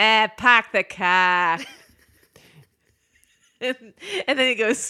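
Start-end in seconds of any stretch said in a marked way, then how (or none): 0.0-1.6 loud put-on Boston accent, "car" drawn out. Retelling how she tried a different accent on a line, put-on Boston accent. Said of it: "she tries a different accent. She sort of does a Boston one".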